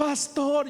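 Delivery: high-pitched, tearful, pleading voice.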